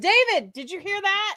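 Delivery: shrill, high-pitched, loud shout. Retelling calling to the listener after a woman's remark, retelling a yell. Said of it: "you don't have to yell".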